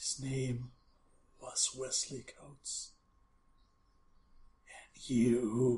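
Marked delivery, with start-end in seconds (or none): 0.0-2.9 very soft, sorrowful, hushed sad voice. Narrating a scene, voicing a voice the listener hears: very soft, sad voice. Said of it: "very soft, very sad".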